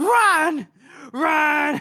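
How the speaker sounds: very high-pitched, desperate screaming. Recounting a man reaching the entrance and shouting a warning to nobody, imitating desperate screaming. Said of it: "he's just screaming out to nobody".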